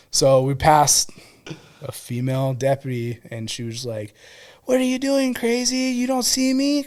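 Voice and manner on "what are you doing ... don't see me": yelling, loud shouting. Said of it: "Like, yelling at him".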